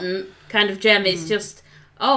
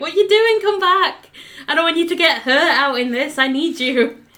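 put-on panicked cartoon voice, higher pitch; 7 semitones higher than usual. Discussing a show, the speaker acts out Peridot calling after Steven: retelling Peridot's panicked shout. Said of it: "really panicked".

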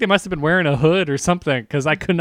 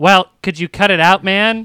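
put-on nerdy voice; 6 dB louder than usual. Retelling what a man said to the speaker in the bedroom, nerdy voice. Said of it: "gives the most like nerdy voice I've ever heard".

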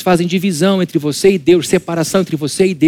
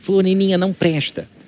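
tiny put-on voice of a little old lady; 4 dB quieter than usual. Mocking an elderly churchgoing woman who judges others: little old lady voice. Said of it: "Com essa vozinha assim".

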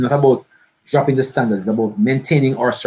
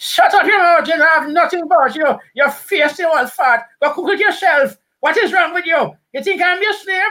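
put-on very high-pitched old lady voice; 4 dB louder than usual. In a skit, the old lady snaps back at an old man demanding food, in an old lady voice. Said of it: "you hear old lady".

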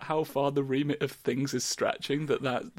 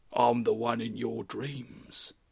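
put-on goblin voice, lower; 3 semitones lower than usual. Voicing a new goblin character who tells the others to stop: Deep Jasper goblin voice. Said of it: "I'm the new goblin character for Things Talk".

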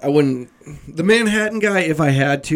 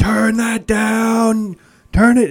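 play-acted, high, irritated yelled complaint, down stretched long; 8 semitones higher, 4 dB louder than usual. Retelling how a man across the sidewalk yelled at the truck: imitating a man screaming. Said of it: "he was screaming".

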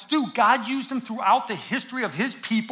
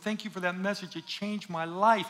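mock weeping, tearful crying voice; 4 semitones lower, 8 dB quieter than usual. Retelling a woman thanking the preacher after a message: imitating a crying woman. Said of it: "the woman's just crying".

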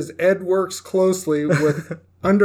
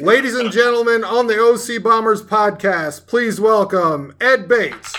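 TV sidekick announcer voice; 2 semitones higher than usual. A podcast host introduces a guest, doing an Ed McMahon sidekick persona. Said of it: "turn on my Ed McMahon sidekick persona".

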